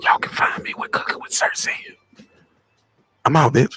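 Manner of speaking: fake seductive, sexy voice. Mocking how another man talks, imitating a put-on sexy voice. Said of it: "Is he trying to put on sexy voice?".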